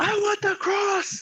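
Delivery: put-on very high, loud, acted-out child's yelling voice. Recounting a kid who stood up among 300 kids; imitating a kid yelling. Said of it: "he just like yells out".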